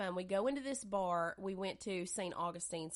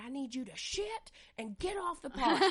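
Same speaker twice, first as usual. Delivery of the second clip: put-on angry tone, higher and louder; 7 semitones higher, 6 dB louder than usual. Retelling what she said while driving on the highway: imitating someone mad. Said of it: "she would get so mad".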